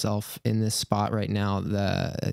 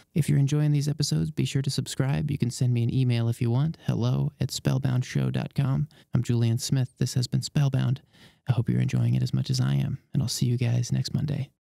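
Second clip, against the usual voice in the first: hushed, whispered voice; 2 semitones higher than usual. Closing the episode while people sleep next door: whispering. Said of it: "we're back to the whispering".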